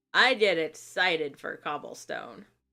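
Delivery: fairly sarcastic, ironic, tongue-in-cheek tone. Speaker turns to the cobblestone part of the work, fairly sarcastic. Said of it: "I say fairly sarcastically".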